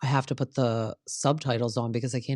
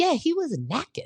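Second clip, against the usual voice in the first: put-on heavy Southern accent with very high pitch. Retelling what Brittany said on the after show: imitating Brittany's thick Southern accent. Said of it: "Her accent is thick".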